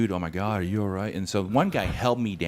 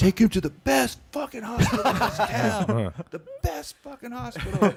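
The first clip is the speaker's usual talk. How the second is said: put-on very high-pitched drunk yelling. Retelling how a cousin yelled at the ambulance driver, imitating cousin yelling. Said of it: "he keeps yelling at the ambulance driver".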